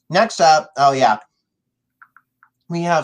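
talking with mouth full. Speaker moves on to the next match while eating, talking while eating. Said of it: "I'm eating right now".

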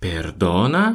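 indignant, affronted, outraged exclamation. Spanish lesson, showing how the phrase carries outrage: indignant, outraged. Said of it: "когда мы произносим эту фразу с такой интонацией, то это сразу же слышно наше возмущение".

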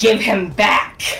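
words spat out as a hiss. In a tabletop role-play, a player speaks as their character, hissing. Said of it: "And literally just hissing".

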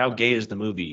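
normal talking voice

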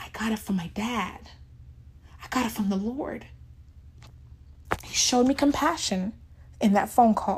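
emotional, breathy, nearly whispered. Recounting a phone call with their dad, getting emotional again. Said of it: "here I am getting emotional again".

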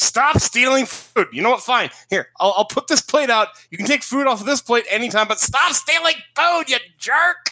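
put-on, high-pitched shouted yelling. Retelling a chapter scene about a food thief: imitating a character yelling. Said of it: "just kinda yells at him".

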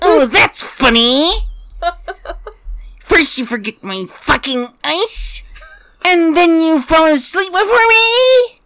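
voice pitched very high. The speaker mocks the other speaker's words back at them, mocking voice like a gas attendant. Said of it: "You sound like, and I'm not going to name, but said gas attendant".

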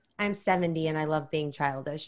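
play-acted, ironic, mocking sarcastic tone. Retelling a woman's reply after being called childish, mock-sarcastic reply. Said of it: "you could tell she's being sarcastic".

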